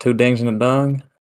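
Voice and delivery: put-on, twangy Southern accent. Another speaker suggests saying the phrase with a southern twang; trying it: southern twang. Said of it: "if you said it with a like a southern twang".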